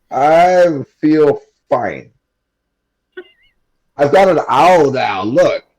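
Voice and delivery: put-on loud, high, tipsy character voice. In character, showing off a new owl to the others, in a drunk voice. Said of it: "Is this is this like your drunk voice?".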